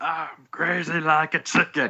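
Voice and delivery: put-on voice, pitched high and drawn out. Doing a comic bit, yelling in a put-on voice. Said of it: "why are you yelling?".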